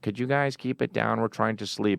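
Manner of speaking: put-on old lady voice. Retelling hearing a voice at night from a backyard tent: imitating an old lady's voice. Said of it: "we heard an old lady's voice, and she was like".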